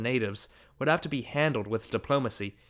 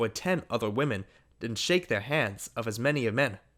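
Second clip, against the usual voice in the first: plain reading voice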